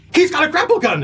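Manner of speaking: pirate voice pitched way up high.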